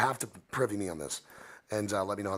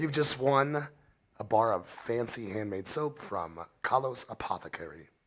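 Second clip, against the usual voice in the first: slow put-on British accent. Announcing that a listener won handmade soap: British accent. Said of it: "Why am I saying that with a British accent?".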